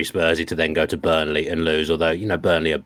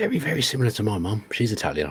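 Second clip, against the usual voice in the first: hushed whispering voice, higher; 5 semitones higher, 3 dB quieter than usual. Comparing a manager to a mother who may overhear: whispering. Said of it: "I'm whispering in case she hears me".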